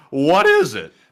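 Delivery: voice deliberately breaking partway through. After reading casualty figures, the speaker turns to a co-host with a question, voice cracking. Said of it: "that voice crack".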